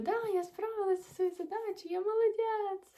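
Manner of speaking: high, loud, proud-sounding voice.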